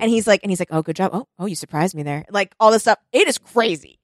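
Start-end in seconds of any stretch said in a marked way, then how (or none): 0.7-2.2 mock ASMR voice, lower and quieter. Describing a video and quoting the man in it, imitating an asmr voice. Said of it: "this ASMR voice that you're doing?".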